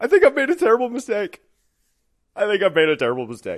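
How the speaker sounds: mock sobbing through tears, high and loud. Retelling their words to a woman who came in, retelling through weeping. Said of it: "And I'm just weeping".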